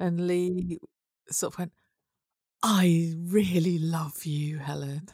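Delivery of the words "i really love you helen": put-on slow, gushing delivery with great gusto. Retelling how Lee told Helen he loved her: imitating Lee saying it with gusto. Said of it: "he said it with such gusto".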